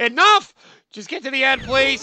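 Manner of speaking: panicked, frantic voice. Struggling through a hard level with failing controls: panicking. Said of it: "I'm panicking now".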